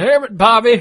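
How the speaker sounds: put-on loud, high-pitched, hollered old man voice. Trying a King of the Hill impression while chatting, doing a Hank impression. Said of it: "That's old man".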